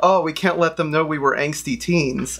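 normal talking voice

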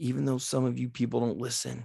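speaking in a whisper. Talking to listeners, whispering. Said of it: "I'm whispering".

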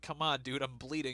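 ordinary talk

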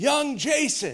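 put-on hearty Irish accent. Retelling Pastor Bob calling him over as people leave, big old Irish voice. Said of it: "I hear his big old Irish voice".

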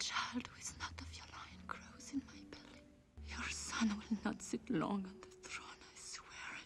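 hushed whisper. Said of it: "What are you whispering over there?".

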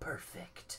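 soft, whispered put-on announcer voice.

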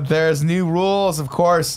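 high, slow, drawn-out proclamation.

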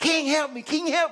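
put-on shrill, very high, loud pleading scream. Retelling a famine story, a woman pleading with the king: imitating a woman screaming. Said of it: "this woman is screaming at the king".

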